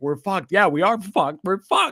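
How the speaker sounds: put-on loud screaming that keeps rising and building. Recalling the drive home, the speaker re-enacts their own screaming. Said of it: "I'm screaming like in my car".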